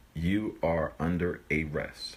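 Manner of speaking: slow, stressed "you are under arrest".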